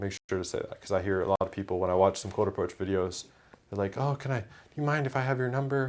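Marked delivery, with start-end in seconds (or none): 4.0-5.9 nerdy, loser-ish, pitched-up geeky voice. Mocking how people in cold approach videos ask for a number: imitating a geeky needy ask. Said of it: "They sound like a geek".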